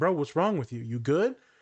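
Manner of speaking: put-on terrified, scared voice. Retelling a friend's reaction to angry crying: imitating a terrified friend. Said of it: "he was terrified".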